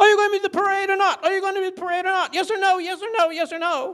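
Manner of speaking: mock very high, shrill, repeated hammering yelling. Retelling a phone call taken on the massage table, imitating someone yelling. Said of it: "she's yelling".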